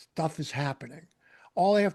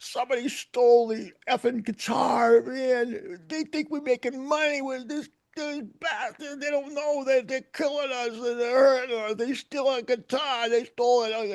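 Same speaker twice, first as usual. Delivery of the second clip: acted, high, drawn-out crying wail, male voice; 7 semitones higher than usual. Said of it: "he starts crying".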